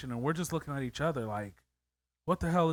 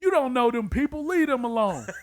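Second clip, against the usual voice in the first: loud, high, yelled calling out; 8 semitones higher, 7 dB louder than usual. Retelling a smoking bystander's warning: imitating a man yelling. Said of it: "he just yells out".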